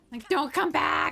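frightened, panicked, pleading voice. Streaming a game after a migraine, the player starts to panic: panicking. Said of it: "And now I'm panicking".

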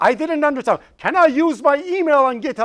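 loud and clear. Showing how to ask a question when you didn't understand, loud and clear. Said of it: "be loud".

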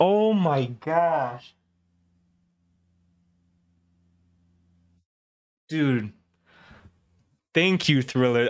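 heartfelt, moved, close to emotional tone. Speaker thanks Thriller for sending money: getting emotional. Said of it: "I'm gonna get emotional".

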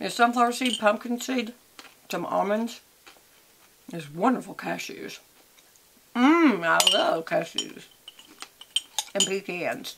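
speaking while chewing, mouth full. Host eating nuts from a cup while talking to viewers, talking with mouth full. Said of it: "I'm talking with my mouth full".

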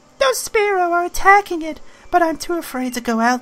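very high put-on girl character voice. Voicing a game character's dialogue while playing, in a put-on girl character voice. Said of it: "I'll keep giving her a different voice".

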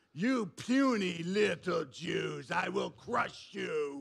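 put-on giant voice.

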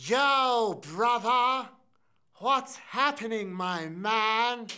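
talking-tree creature voice with Yo drawn out. An actor reads lines before being stopped and asked to change, Ent voice. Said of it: "that whole Ent voice".

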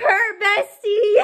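gushing purr, slow, loud, high, drawn-out squeal.

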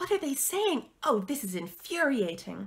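high hissed words, pitch swinging. Daisy asks the narrator what the figures inside are saying, hissed. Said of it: "hissed Daisy".

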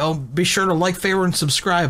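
usual speaking voice

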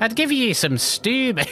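very high-pitched put-on Irish accent. Voice-acting a character speaking to a hungry poor soul, Irish accent. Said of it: "I need the Irish in there".

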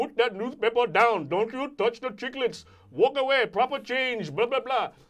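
very high, very loud, shrill New York newsstand vendor. The speaker tells listeners about New York newsstand guys, newsstand guy impression. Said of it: "some guy that talk like this".

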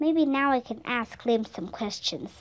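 ordinary delivery

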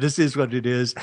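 speech broken by laughter. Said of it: "I'm just laughing 'cause".

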